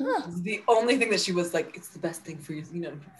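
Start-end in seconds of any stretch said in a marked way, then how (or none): 1.8-2.6 put-on French accent. Retelling what a skincare reviewer said about one product: imitating a French accent. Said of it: "French accent".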